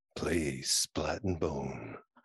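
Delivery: low, sexy voice. Asked by the others to deliver the tagline; sexy voice. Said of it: "Say it in your sexy voice".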